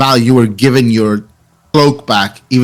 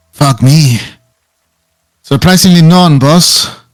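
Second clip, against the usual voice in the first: raised, high-pitched female trooper voice; 5 semitones higher, 5 dB louder than usual. Narrating a fight scene, a voice comes from the armor: female voice from the armor. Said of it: "you hear a female voice come from the armor".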